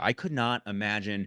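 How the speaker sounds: ordinary talk, nothing marked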